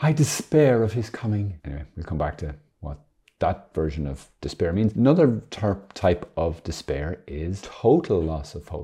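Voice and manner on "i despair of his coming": put-on English accent, pitched higher than normal. Reading a quoted example sentence aloud, in an Emily Bronte accent. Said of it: "You have to do your best Emily Bronte accent".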